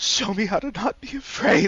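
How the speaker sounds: crying, tearful, high-pitched and loud shout. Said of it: "tears rolling down his eyes".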